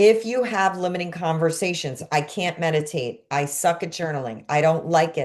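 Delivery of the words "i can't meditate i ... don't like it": plain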